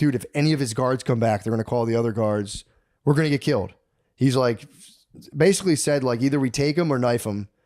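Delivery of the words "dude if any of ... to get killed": ordinary delivery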